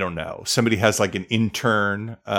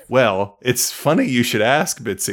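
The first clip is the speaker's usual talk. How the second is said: stilted, artificial, inauthentic put-on sounding delivery; 3 semitones higher than usual. Mocking a character's reply as very inauthentic: imitating Carrie's inauthentic reply. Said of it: "it's very inauthentic".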